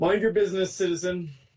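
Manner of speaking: brusque guard voice. Narrator voicing a guard who answers a bystander's question, guard character voice. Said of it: "one of the the guards".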